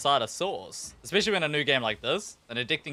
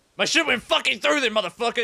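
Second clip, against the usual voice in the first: loud, raised, hostile, aggressive tone with swearing; 9 semitones higher, 5 dB louder than usual. Speaker acting out how a submission comes across, mock-aggressive complaint. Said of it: "It always sounds so aggressive".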